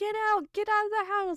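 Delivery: shrill, very high-pitched screaming. Retelling a movie scene where the mom yells at the intruder: imitating a mother screaming. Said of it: "The mother is, like, screaming".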